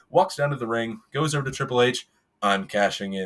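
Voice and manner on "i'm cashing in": drawn-out, unhurried, very slow, deliberate delivery. Retelling a wrestling cash-in, imitating Randy Orton: very slowly. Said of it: "very slowly".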